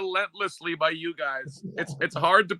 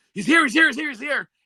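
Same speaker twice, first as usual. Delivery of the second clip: put-on, repeated, high, rushed, loud screaming; 6 semitones higher, 5 dB louder than usual. Retelling how another person suddenly started screaming a warning, imitating someone screaming. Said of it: "Pete starts screaming".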